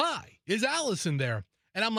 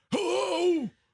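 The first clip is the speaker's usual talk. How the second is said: put-on old man voice, pitched up; 9 semitones higher than usual. Answering a call from an unknown number, in an old man voice. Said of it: "I always answer it in like an old man voice".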